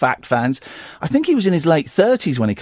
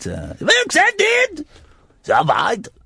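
vaguely German accent, pitched much higher; 11 semitones higher than usual. Imitating a controlling person, vaguely German-esque accent. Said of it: "It's vaguely German-esque".

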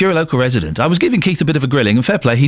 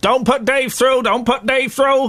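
put-on high-pitched, old-time 1950s Cockney accent; 11 semitones higher than usual. Someone at the BBC imagines the system flagging Dave, in a 1950s cockney accent. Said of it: "say it like a cockney from the 1950s".

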